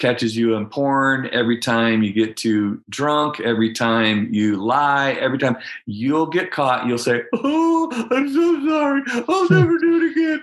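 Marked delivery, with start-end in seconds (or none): 7.4-10.4 mock blubbering voice, higher pitch. Imitating someone caught lying who keeps saying sorry: mock blubbering apology. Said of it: "blubbering, sorry".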